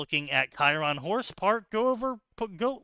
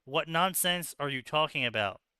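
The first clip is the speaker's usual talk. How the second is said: usual speaking voice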